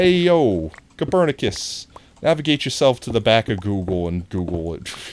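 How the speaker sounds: loud put-on New York Bronx street accent. Doing a joke bit in a put-on bronx new york accent. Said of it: "That is totally like Bronx, New York".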